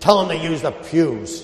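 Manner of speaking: severe, dismissive, really harsh tone. Recounting asking an elderly priest for folding chairs, quoting his reply: mimicking a harsh tone. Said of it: "he said it like that with a really harsh tone".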